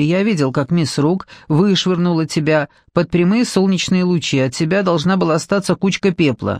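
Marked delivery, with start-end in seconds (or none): none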